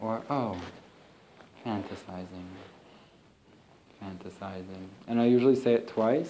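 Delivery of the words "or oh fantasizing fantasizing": very quiet, slow, gentle, loving whisper. Demonstrating how to note a wandering thought, in a slow, gentle, loving voice. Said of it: "I say it in a slow and really gentle and loving voice".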